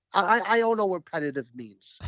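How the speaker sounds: ordinary delivery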